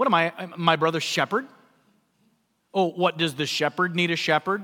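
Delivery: put-on mocking tone. Retelling Cain's sarcastic answer about the shepherd: imitating Cain mocking Abel. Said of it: "the dig on Abel".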